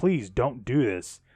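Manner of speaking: mock pleading, put-on begging tone. Speaker recounting a tv character begging another character; imitating pleading. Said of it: "basically pleading like".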